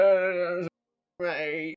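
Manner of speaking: put-on drunken voice with slurred words. Playing a pickpocket approaching a target at a table: drunken voice. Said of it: "sort of drunkenly".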